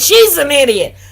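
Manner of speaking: loud, screamed outburst. Retelling what a woman in court screamed: imitating someone screaming. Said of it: "she starts screaming".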